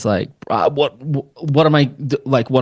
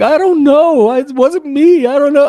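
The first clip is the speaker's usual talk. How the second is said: mock, very high, loud tearful crying; 14 semitones higher, 5 dB louder than usual. Retelling a daughter's denial after being grilled: imitating a crying daughter. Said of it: "to the point where she's crying".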